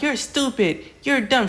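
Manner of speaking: high, furious, angry yelling. Retelling how she yelled at Ralph out the window after court: retelling an angry yell. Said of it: "yelling at him out the window".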